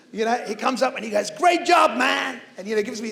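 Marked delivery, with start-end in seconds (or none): 1.3-2.4 put-on high, loud shout in a big American accent. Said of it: "sorry about the American accent".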